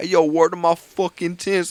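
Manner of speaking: mocking, fake New York accent. Retelling a friend mocking out-of-towners: mocking fake New York talk. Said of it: "nobody come down here and talk like that".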